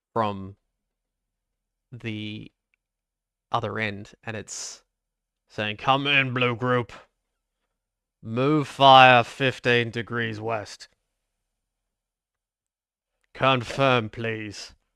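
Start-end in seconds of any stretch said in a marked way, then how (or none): 5.7-14.7 grunting radio-style voice, much louder. Retelling how a military radio crackled to life, in a grunting voice. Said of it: "all you hear is a grunting voice".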